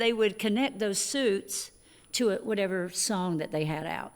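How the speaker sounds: ordinary delivery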